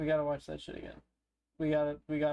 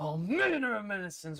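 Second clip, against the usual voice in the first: emphatic reading, hard weight on every word; 5 semitones higher than usual. Showing how the trailer's line should have been said: emphatic delivery as Shadow. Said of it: "They should put more emphasis on that one".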